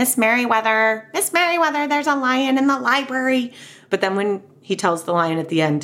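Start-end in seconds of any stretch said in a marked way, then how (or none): 0.0-3.5 nasal voice pushed up through the nose. Describing how they voice characters reading Library Lion aloud, nasally Mr. McBee voice. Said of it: "always kind of has a nasally voice".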